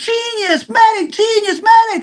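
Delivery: acted, very high, panicked, stretched-out shrieks. Recalling a reaction to a red mark on the speaker's neck, imitating Joel screaming. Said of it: "Joel screaming like".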